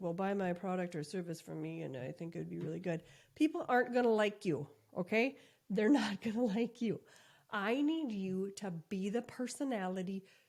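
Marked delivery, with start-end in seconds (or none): 0.0-3.0 dull, flat one-note monotone delivery. Showing how someone might sell a product in a video, flat monotone voice. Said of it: "had a monotone voice and you're like".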